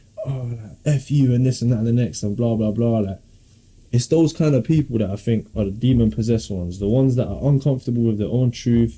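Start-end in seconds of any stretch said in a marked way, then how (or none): none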